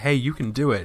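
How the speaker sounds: put-on, pretend whisper. Imagining being tiny on a listener's shoulder, pretend whispering.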